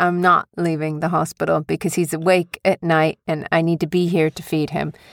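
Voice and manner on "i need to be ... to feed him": ordinary talk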